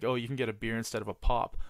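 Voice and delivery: ordinary talk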